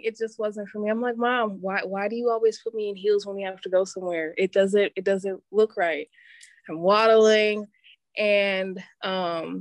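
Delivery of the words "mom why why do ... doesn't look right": ordinary talk, nothing marked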